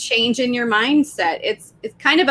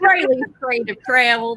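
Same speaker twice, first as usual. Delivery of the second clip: really crummy fake Texas accent. Asked to do the texas accent one more time, really crummy texas accent. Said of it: "This is a really crummy Texas accent".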